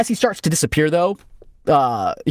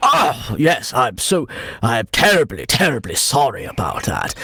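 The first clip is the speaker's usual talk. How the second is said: contrite, terribly sorry, ancient dragon voice; 3 semitones lower than usual. Voicing the ancient dragon apologizing to the players: apologetic ancient dragon voice. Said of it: "he goes".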